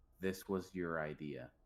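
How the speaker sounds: low, flat, emotionless, dead-level deadpan delivery. Player's character, looking Mara dead in the eyes, speaks deadpan, no emotion. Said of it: "Deadpan. No emotion, just deadpan".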